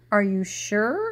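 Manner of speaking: astonished. Reading a story aloud, voicing Rabbit: even more surprised. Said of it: "still more surprised".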